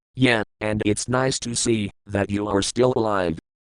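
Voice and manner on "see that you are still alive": ordinary delivery, nothing marked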